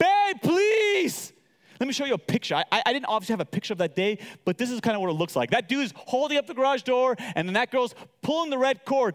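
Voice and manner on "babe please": acted, very high, pleading, begging scream. Retelling calling for help as a garage door threatens to crush them: retelling screaming for someone. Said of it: "I'm screaming for Pastor Yaz to come".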